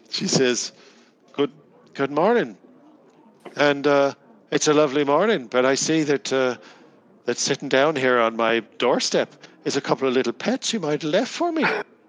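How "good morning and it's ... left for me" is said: put-on Irish-accented woman's voice, higher and louder. Game master voicing a woman greeting the players at her doorstep, Irish accent. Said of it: "Was she Irish?".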